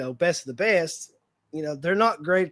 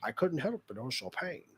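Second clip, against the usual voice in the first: put-on low-pitched Scottish accent; 4 semitones lower, 11 dB quieter than usual. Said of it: "how do you word it in his".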